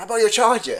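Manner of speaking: high, loud pleading tone.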